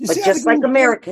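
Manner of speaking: ordinary delivery, nothing marked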